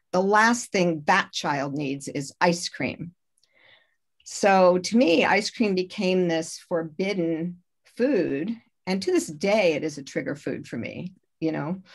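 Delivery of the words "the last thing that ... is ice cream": ordinary delivery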